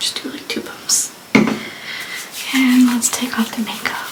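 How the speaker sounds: soft, voiceless whisper.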